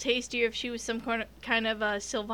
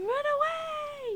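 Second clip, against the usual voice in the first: very high, screaming ghost wail. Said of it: "this ghost shows up and screaming".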